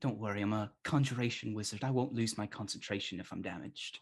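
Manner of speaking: speaking in a whisper. Voicing a wizard character who speaks to the players, whispering. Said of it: "she she like whispers at you".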